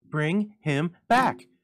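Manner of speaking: shrill, very high, very loud outcry. The old woman drags him toward the door, crying out. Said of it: "cried the old woman".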